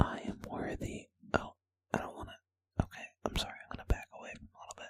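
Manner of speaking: barely audible, very quiet whisper. Instead of yelling it out, the speaker says it softly for contrast: whispered as quietly as possible. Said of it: "I'll whisper it as quietly as I can".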